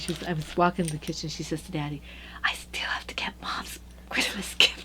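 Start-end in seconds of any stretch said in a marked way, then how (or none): 2.4-4.9 loud stage whisper meant to carry. Retelling what she said to Dad in the kitchen, retelling a loud whisper. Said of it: "loud whisper".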